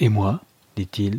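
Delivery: ordinary delivery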